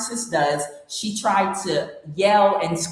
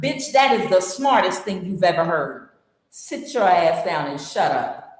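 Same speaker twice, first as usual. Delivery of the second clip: ordinary delivery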